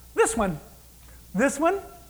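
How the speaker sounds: selective, choosy delivery. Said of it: "it sounds like he's shopping".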